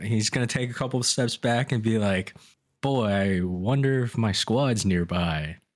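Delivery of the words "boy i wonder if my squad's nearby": very loud, slow, pointed, musing delivery. A player acts out a character stepping back to speak: very loud. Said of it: "like very loudly".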